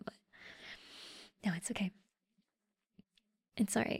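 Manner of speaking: flustered, nervous, hurried, hushed and rushed delivery. Talking to a listener who likes their voice, sounding nervous. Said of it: "I'm so nervous right now".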